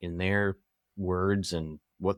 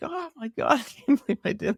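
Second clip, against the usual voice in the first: put-on very high, horrified, panicked scream; 3 dB louder than usual. Retelling what a man screamed after hitting a porcupine, retelling a scream. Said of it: "he's like screaming like".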